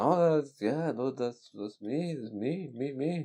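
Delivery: soft, halting, stumbling, repetitive broken English. Retelling how a man who didn't know much english answered: imitating someone with little english. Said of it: "he didn't know much English".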